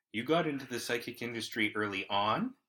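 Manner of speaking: rising inflection ending on early on. Rereading a written question on request: rising question intonation. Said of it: "I'll do that right now".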